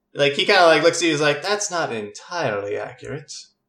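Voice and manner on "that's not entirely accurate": leaf said in a put-on Dominion accent. Recapping a scene, voicing the character who peeks out: Leaf in a Dominion accent. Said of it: "I've been working on my Dominion accent".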